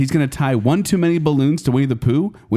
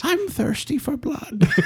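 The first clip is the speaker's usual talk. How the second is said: very high storybook cartoon bear voice; 12 semitones higher, 4 dB quieter than usual. Asked to say a line in the Winnie the Pooh voice, doing the Winnie the Pooh voice. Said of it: "in the Winnie the Pooh voice".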